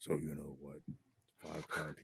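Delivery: eerie, creepy, hushed storyteller whisper. Describing a video they made, the speaker demonstrates its creepy voice. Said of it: "I'm doing that creepy voice".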